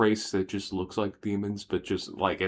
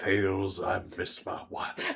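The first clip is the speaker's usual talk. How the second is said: slow, drawn-out, creaky, raspy, swooping voice. Imagining a character telling Tails he misses his wife: Eggman voice. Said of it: "I can't help but imagine the fucking Eggman".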